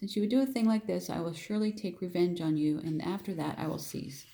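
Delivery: ordinary delivery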